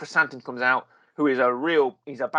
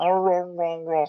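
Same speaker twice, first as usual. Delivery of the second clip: bad put-on creature noise, pitched higher; 4 semitones higher than usual. Describing the classic Wookiee noises in the show: awful Chewbacca impression. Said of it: "That's an awful impression of Chewbacca".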